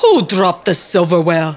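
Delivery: grunting in disgust. The butler, spotting them in the kitchen, says to himself: disgusted grunt. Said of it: "he grunted to himself in disgust".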